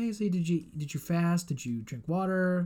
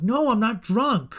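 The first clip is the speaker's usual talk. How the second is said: raised, slow, mock-defensive protest; 6 semitones higher, 8 dB louder than usual. Recounting a conversation about the night before, retelling getting defensive. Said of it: "I'm like getting all defensive".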